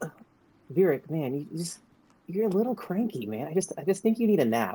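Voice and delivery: very calm, cool, collected, laid-back delivery. Voicing a character approaching with a drink: very calm and collected. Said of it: "he's very calm and collected".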